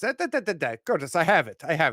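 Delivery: loud, heavy, thick, exaggerated Eastern European accent. Imitating the guy taking your bagel order, in a thick eastern european accent. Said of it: "Eastern European guy in his thick accent says".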